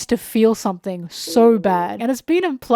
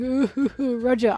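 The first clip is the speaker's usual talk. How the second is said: mock blubbering, weeping, wailing moan with hooting sobs; 4 dB quieter than usual. Retelling how a sad character cried out over Roger: imitating a character crying. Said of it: "crying, going".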